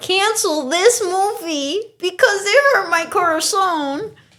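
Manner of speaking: high, slow, drawn-out whiny crybaby voice. Mocking Gen Z viewers calling theaters: put-on Gen Z crybaby voice. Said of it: "When you think of a Gen Z, that's the voice you think of".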